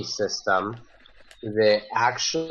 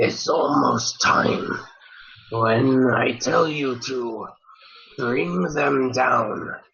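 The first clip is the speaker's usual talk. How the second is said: really scratchy, phlegmy, raspy, hacking on every word. Storyteller voices a character speaking in the scene, in a really scratchy voice. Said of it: "say in just a really scratchy voice".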